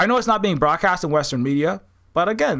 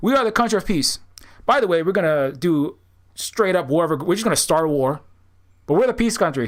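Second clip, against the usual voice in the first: normal talking voice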